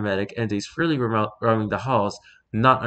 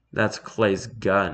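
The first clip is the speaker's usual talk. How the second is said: deadpan, flat, expressionless, much slower; 3 semitones lower than usual. Shot again by Marion, 05 answers without reacting: deadpan. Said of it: "he deadpans".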